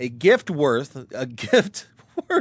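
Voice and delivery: reading aloud while laughing. Reading a written passage aloud, laughing while reading. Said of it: "I'm laughing because I know what I'm about to read".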